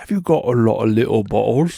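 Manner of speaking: very loud, botched, clumsy English accent. Asked to try an accent, the speaker attempts a bad James Bond impression. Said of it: "It's the only way I can do an English accent".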